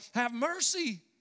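mock yelling. Describing people who stand at a distance and yell out, retelling a yell. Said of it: "They stand at a distance yelling out".

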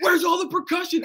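high-pitched mock scream.

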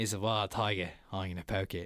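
very deep, low wildlife host voice. Retelling a comedian's bit about poking a tiger: Steve Irwin impression. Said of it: "talking about Steve Irwin, and he goes".

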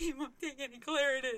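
crying words. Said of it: "fall into a heap and just start crying".

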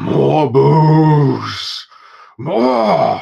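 giant bellowing, loud, rough, pitched high, booze drawn out. Narrating a scene, the giant calls over to the orc barkeeper, giant yelling. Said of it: "you hear the giant yell".

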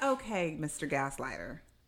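ordinary talk, nothing marked

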